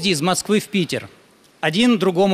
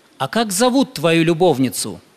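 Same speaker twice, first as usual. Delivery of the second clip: plain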